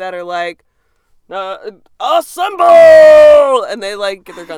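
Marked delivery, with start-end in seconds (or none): 2.0-3.6 very loud, high, booming, stretched-out shout. Imitating regular dudes in a militia called up: imitating a loud shout. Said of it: "That was real loud".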